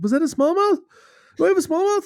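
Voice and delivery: mock, very high, rising, freaked-out disbelief. Retelling landing a fish and checking the net, retelling freaking out. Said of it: "I'm just freaking the fuck out".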